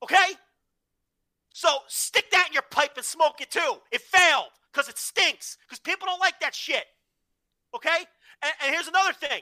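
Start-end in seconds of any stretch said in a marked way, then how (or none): 1.5-8.1 yelling and screaming, much higher pitch. Ranting that a universe nobody watched failed because it stinks, yelling and screaming. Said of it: "I'm yelling and screaming".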